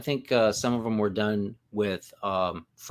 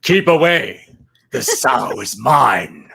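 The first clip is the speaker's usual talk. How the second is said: put-on demon voice, growing louder; 2 semitones higher, 12 dB louder than usual. Picturing a casting video testing voices for the demon: General Zod voice. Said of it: "in his General Zod voice".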